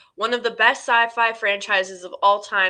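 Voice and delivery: ordinary talk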